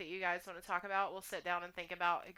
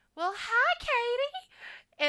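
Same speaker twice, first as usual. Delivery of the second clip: loud, high-pitched Texas voice. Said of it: "she'll be like".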